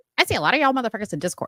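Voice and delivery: high chipmunk-style voice. Imitating how another speaker sounded earlier: imitating Suni sounding like a chipmunk. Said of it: "does Suni sound like a chipmunk".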